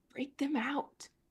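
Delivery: whispering softly. Whispering to Nimble between retching sounds in character: quiet whisper. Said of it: "whisper to Nimble really quietly".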